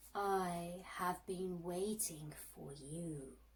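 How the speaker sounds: octopus voice, deep and low. Reading a story aloud, the narrator speaks as the octopus in a deep octopus voice. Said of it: "said the octopus with a deep voice".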